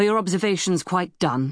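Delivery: ordinary delivery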